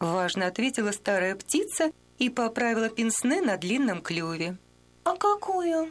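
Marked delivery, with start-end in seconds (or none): 5.0-5.9 timid, shy voice. Read from a fable: a young chick answers the stern old bird, timidly. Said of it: "робко переспросил малыш".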